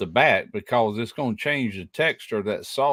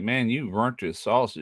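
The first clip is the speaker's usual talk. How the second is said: ordinary talk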